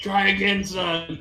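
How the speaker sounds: voice of a dead man's ghost. Voicing the dead Ron speaking from beyond: ghost voice. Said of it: "the ghost one".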